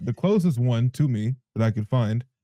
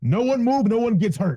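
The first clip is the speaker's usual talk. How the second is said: very high, commanding put-on in-character yell; 12 semitones higher, 3 dB louder than usual. Voicing a character who grapples someone and yells at the others: yelling in character. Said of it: "he just yells out".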